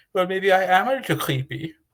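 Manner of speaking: put-on Danish accent. Retelling what a birdwatching man said back to him, in his Danish accent. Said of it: "in his Danish accent says".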